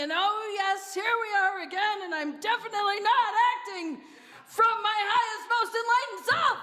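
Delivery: full-on loud yelling, voice rising. Demonstrating a defensive reaction once a button gets pushed, yelling. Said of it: "and now I'm yelling".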